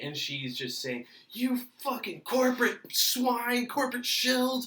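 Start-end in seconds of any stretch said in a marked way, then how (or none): 1.3-4.7 mock very high, shrill screaming tirade. Retelling how a woman kept screaming at the people working there, imitating someone screaming. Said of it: "So she's screaming at us".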